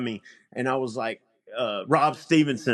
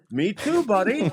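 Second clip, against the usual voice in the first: put-on friendly, pitched-up Canadian accent; 9 semitones higher than usual. Speaker recounts a man's reply about loving Spider-Man: Canadian accent. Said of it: "in that Canadian accent".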